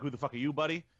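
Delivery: ordinary talk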